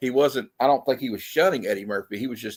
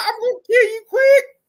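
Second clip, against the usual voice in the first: mock crying, higher and louder; 7 dB louder than usual. Retelling a movie character's threat to Quick, imitating someone crying. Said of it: "crying the whole time".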